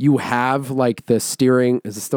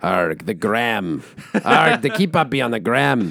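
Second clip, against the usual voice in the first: talking like a pirate. Asking pirate listeners to reach out on Instagram: put-on pirate voice. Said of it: "Any of our pirate listeners".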